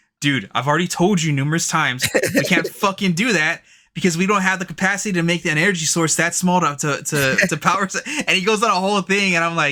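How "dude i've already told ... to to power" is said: mock heated, fed-up, angry worked-up outburst. Retelling how a friend reacts to being teased; imitating a friend's angry outburst. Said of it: "his eyes get all buggy and he gets all red".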